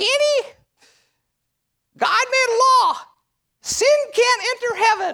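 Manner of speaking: put-on high-pitched, loud German accent. Imitating an elderly lady who used to get in their face, german accent. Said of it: "She's got this German accent".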